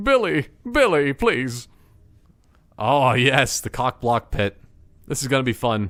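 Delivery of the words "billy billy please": put-on crying, sobs and blubbering through the words. Acting out a paintball scene, begging Billy: mock crying. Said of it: "I'm crying now".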